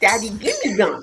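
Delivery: put-on simple, direct small toddler voice. Retelling a story about a little daughter with gum: imitating a two-year-old daughter. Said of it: "she was like two".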